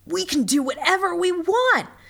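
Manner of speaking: shrill, very high, high-pitched yelled shout. A camper to the other campers after the director signs off: yelled. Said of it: "yelled [name]".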